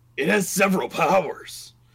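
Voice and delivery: bellowed put-on wrestler impression. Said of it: "sprouted behind the bar mustache".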